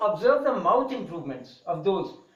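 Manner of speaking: ordinary talk, nothing marked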